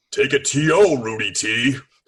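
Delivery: play-acted booming, loud, carrying shout. Retelling a shout heard from behind at a Wolves Rockets game, in a booming Jesse Ventura voice. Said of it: "I hear this booming voice say".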